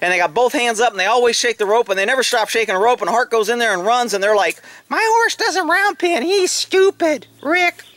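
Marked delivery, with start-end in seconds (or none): 4.9-7.7 dumb put-on voice, high, slow and drawn out. Imitating riders who keep shaking the rope, in his put-on stupid voice. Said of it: "that's my stupid voice".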